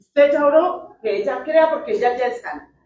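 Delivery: insistent, firm delivery.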